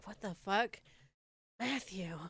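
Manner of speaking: slow, stunned, really shocked outburst. Acting out how they would react to the surprise: acting really shocked. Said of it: "I would be really shocked".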